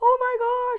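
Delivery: high-pitched, loud scream of excitement. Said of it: "And I screamed".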